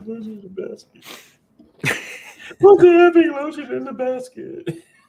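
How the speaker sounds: shrill, very loud, high-pitched shriek. Talking about a favorite movie scene, quoting the killer in a Buffalo Bill impression. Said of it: "I just like how he was just like".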